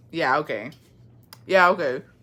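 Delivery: ordinary talk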